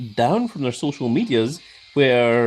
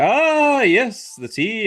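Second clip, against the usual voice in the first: excited, swooping pitch, like a sudden realization; 8 semitones higher than usual. Demonstrating how to start a Danhausen impression: excited Danhausen impression. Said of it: "very, very excitedly remembered something".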